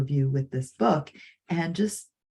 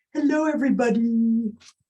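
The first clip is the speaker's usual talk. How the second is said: high-pitched, lovable, cuddly furry monster voice; 6 semitones higher, 3 dB louder than usual. Reading The Monster at the End of This Book aloud: Grover voice. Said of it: "I don't do a great Grover voice".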